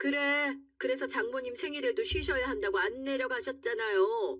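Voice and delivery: high, needling sarcastic jab. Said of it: "제가 비꼬는 말투로 얘기를 했어요".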